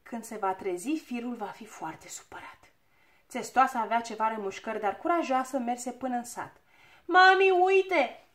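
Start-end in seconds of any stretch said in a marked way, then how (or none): 7.0-8.1 calling out loudly. A little girl calls out to her mother: shouted. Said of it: "Strigă o fetiță".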